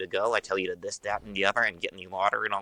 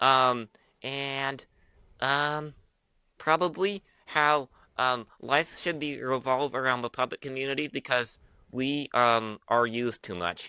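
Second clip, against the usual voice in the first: snarky, high-pitched ventriloquist puppet voice; 5 semitones higher than usual. Speaking as a puppet about the puppet community, in a snarky puppet voice. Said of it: "kind of the snarky side that gets away with everything".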